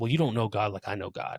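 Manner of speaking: normal talking voice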